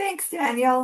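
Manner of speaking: small, squeaky, high-pitched voice. Moderator thanks the presenter before opening questions, in a squeaky voice. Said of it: "that was a squeaky voice".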